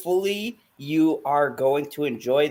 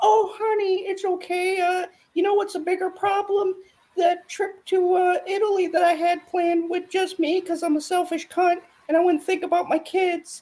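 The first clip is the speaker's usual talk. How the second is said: high, squeaky cartoon voice. Acting out what that woman will say, in a Mickey Mouse-like voice. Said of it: "sound like Mickey Mouse?".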